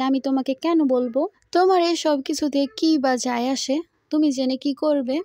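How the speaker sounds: plain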